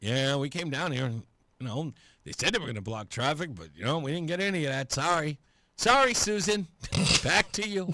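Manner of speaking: utterly disappointed newsreader voice, low, barely audible. Mocking a live tv report that got nothing, in a mock-disappointed reporter voice. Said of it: "absolutely disappointed voice".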